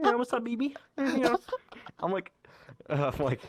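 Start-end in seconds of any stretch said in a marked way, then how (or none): 0.0-1.4 very high cartoon frog puppet voice. Speaker retells what a Kermit-headed avatar says to them: imitating a Kermit avatar. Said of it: "has Kermit's head, and just goes".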